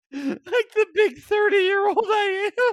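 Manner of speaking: mock sulky kid voice.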